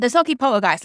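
big, loud announcement.

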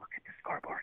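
acted-out whisper. Recounting a baseball game, quoting what one woman whispered to another, retelling a whisper. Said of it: "she's like whispered at her".

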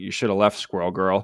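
mumbled, muttered character voice. Voicing a character who mumbles at another while leaving: mumbling in character. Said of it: "kinda mumbles".

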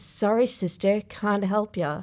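plain

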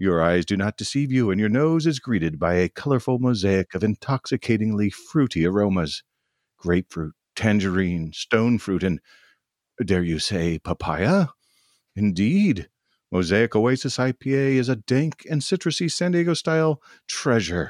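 grand, dramatic theatrical reading. Reading a beer's description aloud for listeners, as a dramatic reading. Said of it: "dramatic reading of a beer".

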